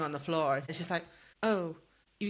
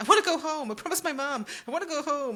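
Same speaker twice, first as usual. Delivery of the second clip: acted-out nagging, wheedling, pitched-up whine; 9 semitones higher than usual. Complaining that Freya interrupts every chapter, imitating Freya's whining. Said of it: "Freya is getting a bit whiny".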